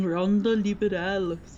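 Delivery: Spanish words spoken with a Japanese accent. Speaker blurts out a Spanish phrase; Spanish with a Japanese accent. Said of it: "speaking Spanish with a Japanese accent".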